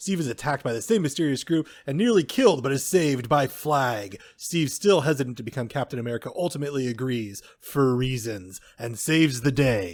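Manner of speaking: grand, dramatic male narrator reading voice. Reading aloud a movie synopsis the other speaker wrote: dramatic guy voice. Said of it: "reading your synopses with, uh, with dramatic guy voice".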